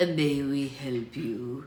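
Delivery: deep, hoarse, raspy voice, very slow and drawn out. Narrator voicing a man speaking to a driver, in a deep raspy voice. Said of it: "asked in a deep and raspy voice".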